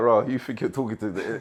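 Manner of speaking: put-on Igbo-accented voice. Retelling a phone call with mum, in an Igbo accent. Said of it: "in an Igbo accent".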